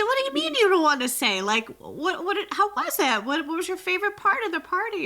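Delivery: high, loud, incredulous and pressing.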